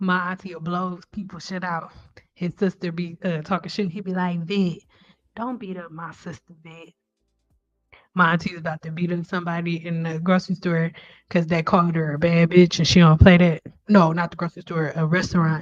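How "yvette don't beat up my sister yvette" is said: hushed, easygoing, smooth, very soft voice. Imitating an aunt's husband who always talks calmly: imitating uncle's smooth talk. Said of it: "That's how he talk".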